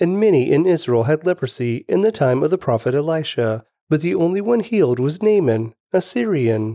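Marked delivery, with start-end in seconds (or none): none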